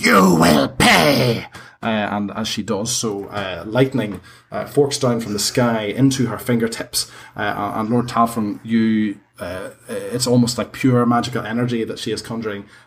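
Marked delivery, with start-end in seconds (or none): 0.0-1.5 shrill, rasping, rough, furious hag scream. Voicing a hag raging at the party: hag screaming. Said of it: "she screams".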